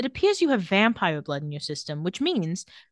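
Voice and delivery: ordinary delivery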